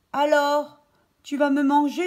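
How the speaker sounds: strangled voice. Reading a story aloud, voicing a child asking his teacher a question, in a choked voice. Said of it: "d'une voix étranglée".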